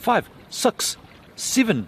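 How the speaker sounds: New Zealand accent. Counting up from five to show how Kiwis say numbers: New Zealand accent. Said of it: "I'm gonna count up from from five in Kiwi, bro".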